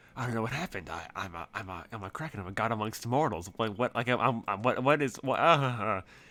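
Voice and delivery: disturbed, dazed muttering under breath. Voicing a disturbed Kraken character after a sanity check: mumbling under his breath, disturbed. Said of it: "mumbling under his breath".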